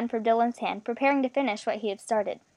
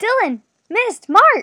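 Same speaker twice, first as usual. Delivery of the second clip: panic-stricken shout, very high and loud; 11 semitones higher, 11 dB louder than usual. Sander calls from far away for Dylan, Miss and Mark, panic-stricken. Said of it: "a panic-stricken voice echoed".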